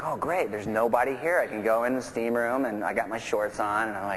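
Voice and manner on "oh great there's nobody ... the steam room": ordinary talk, nothing marked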